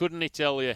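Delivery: slipping into Scottish accent.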